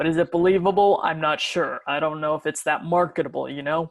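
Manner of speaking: deep voice with gravel. Showing a rougher voice after being asked for one: deep voice with a little gravel. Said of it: "I can go this deep and add a little gravel to it".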